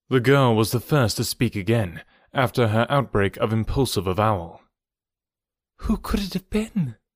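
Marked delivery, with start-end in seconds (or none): 5.7-6.9 high, hushed half-whisper under the breath. After the beast is killed, the girl speaks to the man again, half-whispered. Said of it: "she whispered".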